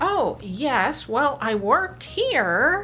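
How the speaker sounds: slow, wide, rising uptalk at phrase ends.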